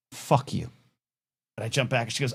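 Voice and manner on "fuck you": put-on low, deadpan, matter-of-fact delivery. Retelling an elevator encounter, quoting a straight-faced reply: imitating a deadpan retort. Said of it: "straight face, and just goes".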